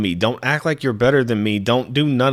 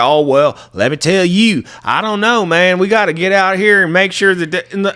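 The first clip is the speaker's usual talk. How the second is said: exaggerated, over-the-top fake Texan accent, raised and high; 8 semitones higher, 6 dB louder than usual. Mocking how callers expect a texan to sound: mock texan accent. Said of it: "The fuck am I supposed to sound like?".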